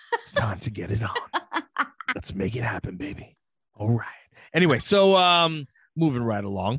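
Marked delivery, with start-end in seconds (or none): 0.1-3.3 low, seductive, sultry voice. Joking with another speaker, then switching into a phone sex voice. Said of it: "Phone sex voice".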